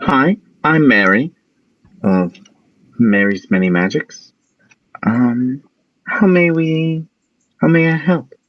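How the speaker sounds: small, high, little gnome voice. Game master voices a shop's gnome greeting the players: small gnome voice. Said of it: "there's a small gnome comes out".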